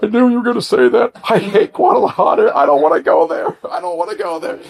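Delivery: put-on blubbering, high swooping bawling wail like baby. Retelling how a man reacted to being told to move to Guadalajara, imitating a man bawling. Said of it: "the guy starts bawling like a baby".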